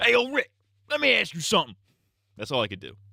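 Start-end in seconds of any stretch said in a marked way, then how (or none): 0.0-1.8 very high, squeaky put-on character voice. Showing the only Shane impression they can do: Shane impression. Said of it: "my only good Shane impression is like".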